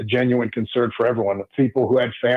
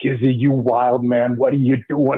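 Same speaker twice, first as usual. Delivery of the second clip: put-on thick Italian accent. Retelling what the special teams coach shouted, imitating Frank Novak's thick Italian accent. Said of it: "he's got that thick Italian accent".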